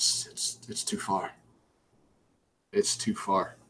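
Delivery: breathy whisper, muttered to oneself, repeated. Acting out a character's reaction in a shared story, muttering to himself. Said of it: "I'm muttering to myself".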